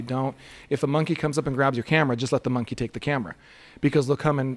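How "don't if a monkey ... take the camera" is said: normal talking voice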